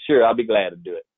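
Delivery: begrudging, reluctant tone laced with sarcasm. Quoting the speaker's own past reply about a task they didn't want: retelling a sarcastic reply. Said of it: "I said sarcastically".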